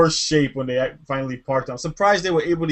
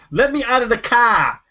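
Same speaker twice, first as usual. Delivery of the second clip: sudden put-on Boston accent, pitched up; 8 semitones higher, 4 dB louder than usual. Quoting a woman who demanded to get out of the car, imitating a Boston accent. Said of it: "she became a Boston accent".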